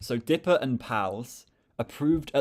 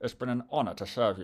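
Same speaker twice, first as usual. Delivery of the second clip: spoken tightly through gritted, clenched teeth; 3 dB quieter than usual. Trying the line as instructed, spoken through clenched teeth. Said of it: "You kind of have to talk t- through your teeth".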